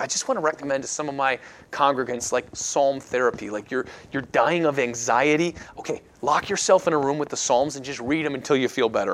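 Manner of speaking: ordinary talk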